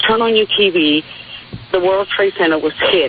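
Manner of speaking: ordinary talk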